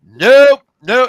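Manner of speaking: high, shrill, full-volume yell. Retelling refusing a needle while his dad was in the room, retelling his own yelling. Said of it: "and I'm fucking yelling".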